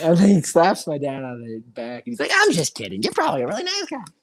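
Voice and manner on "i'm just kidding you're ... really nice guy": very high, squeaky, swooping cartoon character voice. Quoting a man who joked with the speaker's dad, in a cartoon-character voice. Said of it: "that sounds like an actual cartoon character".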